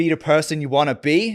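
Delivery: attempted American accent. Asked to continue, trying the line in an attempted American accent. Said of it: "but in an American accent".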